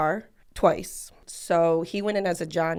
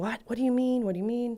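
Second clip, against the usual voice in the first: urgent, high, pressing, disbelieving, repeated insistence; 5 semitones higher than usual. Retelling getting a call that a brother was hit: imitating own loud words. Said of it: "I was louder than I thought I was".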